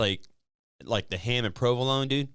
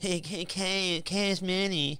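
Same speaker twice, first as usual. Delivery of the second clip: put-on cartoon kid voice, higher pitched; 7 semitones higher, 3 dB quieter than usual. Doing a quick impression that the other speaker calls horrible: Cartman voice. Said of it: "that was my Cartman impression".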